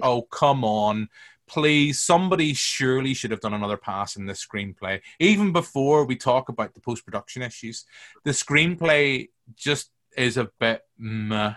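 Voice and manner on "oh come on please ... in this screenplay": usual speaking voice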